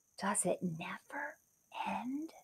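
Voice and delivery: hushed, very quiet, barely audible whisper. Narrating a story, reading Kate's line as she gazes up the beanstalk, whispering. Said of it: "Kate whispered".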